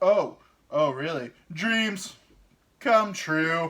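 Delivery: slow, loud and dead serious delivery. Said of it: "just said it like that".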